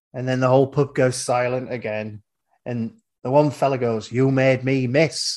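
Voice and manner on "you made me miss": put-on genuine-sounding, proper Yorkshire accent. Retelling a pub story where one fella speaks up: Yorkshire accent. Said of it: "Proper Yorkshire accent".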